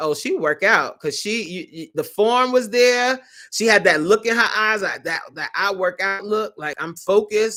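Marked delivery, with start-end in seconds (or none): none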